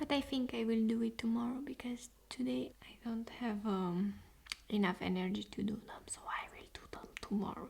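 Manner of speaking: whispered, hushed speech. Doing eyebrows in an ASMR video, talking to viewers, whispering. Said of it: "Sorry for whispering".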